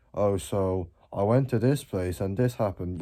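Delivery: dull, mundane, flat and bored monotone delivery. Speaker showing viewers how not to talk, in a mundane, boring tone. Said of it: "speak in this mundane, boring tone".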